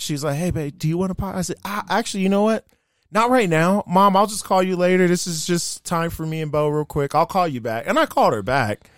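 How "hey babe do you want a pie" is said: quiet, soft, hushed stage half-whisper. Recounting what she half-whispered to the speaker, imitating someone half-whispering. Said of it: "And then she whispered".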